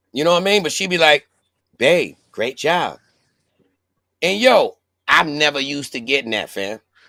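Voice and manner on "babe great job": prim, teacherly schoolteacher voice. Retelling how she praises him, in a school teacher voice. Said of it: "she be sounding like a school teacher".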